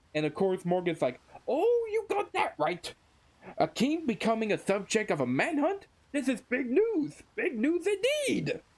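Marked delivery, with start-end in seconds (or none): 1.4-8.6 very high-pitched, cartoonish put-on character voice. Retelling a scene and speaking Morgan's lines: Morgan voice. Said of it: "Sorry about my voice".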